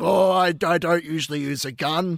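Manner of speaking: very slow, deliberate, drawn-out detective voice. Retelling a chat about a detective and a gun, you act out his reply in a put-on character voice. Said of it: "I'm doing the voices now".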